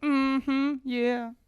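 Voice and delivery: very high, put-on girly voice. Retelling going up to a store counter: imitating himself in a girl accent. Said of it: "made, like, a girl accent and go".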